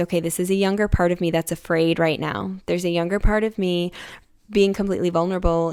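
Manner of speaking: ordinary talk, nothing marked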